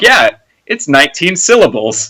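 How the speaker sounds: sarcastic TV announcer delivery. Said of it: "the announcer there was very sarcastic".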